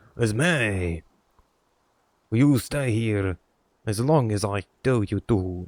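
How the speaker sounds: put-on demonic voice with French accent. Doing a requested French demon voice: French demon voice. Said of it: "Do the French demon one".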